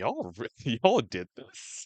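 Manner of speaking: flabbergasted, swooping, drawn-out tone of disbelief. Retelling an actor's reaction to the table read: imitating flabbergasted Pedro Pascal. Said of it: "he's just flabbergasted, he's like".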